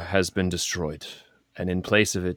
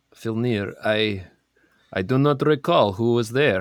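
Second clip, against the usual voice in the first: fake, played-up Russian accent; 4 semitones higher, 3 dB louder than usual. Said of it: "Do a R-, Russian accent again for me".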